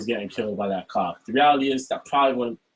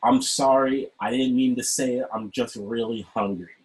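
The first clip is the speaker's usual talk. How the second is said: mock-apologetic put-on tone. Retelling how she apologized after denying she said it; mock-apologetic. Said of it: "then she proceeds to apologize".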